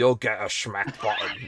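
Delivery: put-on Scottish accent. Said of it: "like that".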